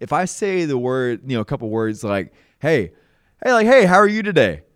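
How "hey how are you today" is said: very loud, cheery, bright sing-song upbeat tone. Showing how tone changes words, a greeting in a positive tone with a smile. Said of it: "in that positive tone with a smile on my face".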